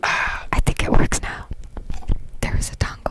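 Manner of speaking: very loud, forceful, breathy whisper. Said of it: "Can you hear me whispering?".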